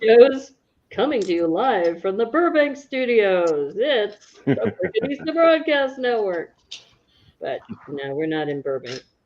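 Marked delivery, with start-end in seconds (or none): 0.0-6.5 pitched-up broadcast announcer voice. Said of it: "we need our best announcer voices for this".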